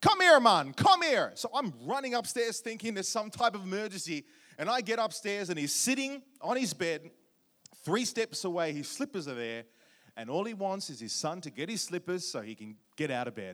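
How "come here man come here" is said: put-on high, loud Jamaican-accented calling-out voice. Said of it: "That's how he sounded, Jamaican father".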